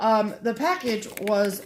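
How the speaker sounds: ordinary talk, nothing marked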